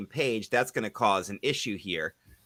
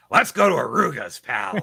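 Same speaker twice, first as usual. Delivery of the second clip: slow, deliberate, drawn-out big promo voice; 4 semitones higher, 3 dB louder than usual. Suggesting how the plug should sound, doing a Mister McMahon voice. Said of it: "channel a little more Mister McMahon".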